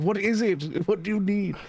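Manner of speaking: put-on demanding shout. Retelling how a man shouts into a phone, imitating someone yelling. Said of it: "He's like yelling".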